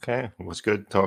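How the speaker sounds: soft, bored voice with zero enthusiasm. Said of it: "you sound so excited".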